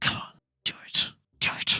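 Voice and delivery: breathy, hissed whisper under the breath. Narrator voicing a woman as the player gets close to touching her: hissing under her breath. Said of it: "She hisses out ... under her breath".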